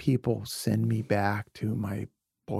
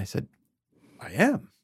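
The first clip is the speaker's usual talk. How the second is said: ordinary talk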